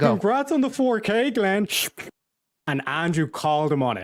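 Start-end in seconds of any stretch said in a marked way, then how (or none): 0.1-1.7 pitched-up, fawning, sycophantic sarcasm. Mocking a guy sucking up to a channel host, mocking sucking-up impression. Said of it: "mocking impression of sucking up".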